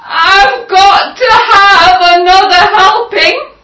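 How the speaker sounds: shrill, very high, loud, yelping cry. Reading the wolf's line as he runs around the kitchen, yelping. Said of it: "running around the kitchen yelping".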